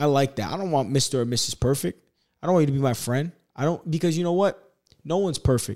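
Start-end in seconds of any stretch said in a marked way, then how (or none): none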